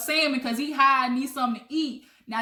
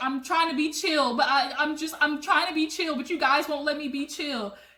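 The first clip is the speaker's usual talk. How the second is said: put-on crying voice. Retelling how Teddy got up crying: imitating Teddy crying. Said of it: "She gets up crying like".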